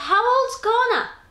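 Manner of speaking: mock called-out yell, very high pitched. Speaker retelling how they called out to the bird, retelling a yell. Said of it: "So I yelled".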